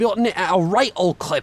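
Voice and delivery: loud, bad, fake put-on British accent. Commentating, then announcing "now I'm British": bad put-on British accent. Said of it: "now I'm British. ... That's not a good British accent".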